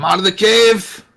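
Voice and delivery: high-pitched shouting, calling out. A character calls to someone hiding in a cave, yelling. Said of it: "the one yelling".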